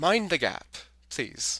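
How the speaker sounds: platform announcer style, public announcement voice. Saying they know that voice, the speaker does the London Underground announcer voice. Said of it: "the voice of the of the uh, London Underground".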